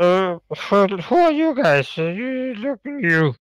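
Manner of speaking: put-on high-pitched, toothless, drunken old man voice. Playing one of two old drunk men in an imagined scene, drunken accent. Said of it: "you've got the best drunken accent I've ever heard".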